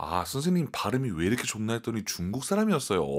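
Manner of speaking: ordinary talk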